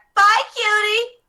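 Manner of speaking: very high, very loud shouted call. Voicing Cherry answering the departing players: shouting back a goodbye. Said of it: "Cherry will shout back".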